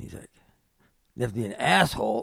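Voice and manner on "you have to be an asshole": rough yell that keeps building, high and loud. Retelling hearing a man yelling nearby, the speaker imitates him getting louder. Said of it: "he's kind of getting a little louder".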